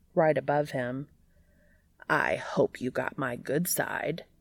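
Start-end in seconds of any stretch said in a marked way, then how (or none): 2.1-4.2 low, gravelly voice, clearly irritated and annoyed. Reading fiction aloud, a character speaks from right above another: low, gravelly, annoyed voice. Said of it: "a low, gravelly, and clearly annoyed voice says".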